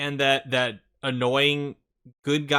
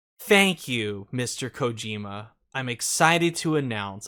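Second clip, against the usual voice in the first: put-on android-like robotic inflection; 3 semitones lower than usual. Describing a man's odd, same-every-time way of speaking, imitating an android-like speaker. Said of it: "he sounds like an android".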